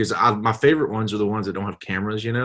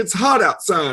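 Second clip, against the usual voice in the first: higher-pitched put-on lady voice; 8 semitones higher, 3 dB louder than usual. Retelling ordering a drink while still talking like a lady. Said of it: "I was talking like a lady".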